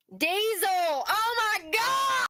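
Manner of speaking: very high yell, stretched long and drawn out. Reacting to learning the van engine is diesel: yelling. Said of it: "Why are we yelling?".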